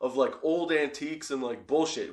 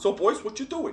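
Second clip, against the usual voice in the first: put-on Italian accent with raised pitch; 6 semitones higher than usual. Retelling how a little Italian man came out and spoke: put-on Italian accent imitating a man. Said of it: "He didn't sound like that at all".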